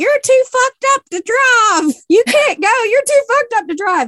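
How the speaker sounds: play-acted, very high, shrill screaming. Retelling a woman chasing a man to his truck, imitating someone screaming. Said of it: "literally screaming".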